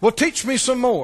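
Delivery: mock sarcastic, mocking, disrespectful tone. Acting out a listener's line with sarcastic mocking, imitating a sarcastic, mocking tone. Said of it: "Can you hear the tone of unbelief?".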